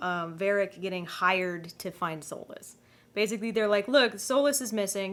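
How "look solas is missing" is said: plain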